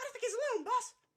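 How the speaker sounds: tiny, very high-pitched, loud little-guy voice. Voicing the little guy who hears someone fall: little guy's voice. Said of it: "the little guy whips his head around and goes".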